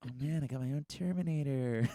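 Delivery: put-on high excited kid voice. Retelling a movie scene line: John like a little excited kid. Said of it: "it's like a little excited kid".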